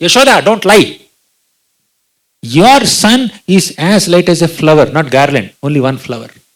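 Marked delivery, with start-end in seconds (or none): 0.0-4.9 put-on, loud, furious, accusing scolding tone. Retelling the gopis rebuking yashoda: imitating furious scolding. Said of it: "the gopis became even more furious".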